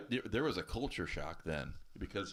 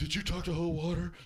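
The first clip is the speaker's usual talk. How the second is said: very high-pitched, shrill, loud voice; 9 semitones higher, 5 dB louder than usual. Retelling a phone call, imitating Helena. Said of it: "not a bad imitation of Helena".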